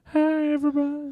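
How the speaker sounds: put-on old man voice pitched very high. Discussing Family Guy characters, the speaker does a Herbert voice. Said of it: "The old guy with the walker".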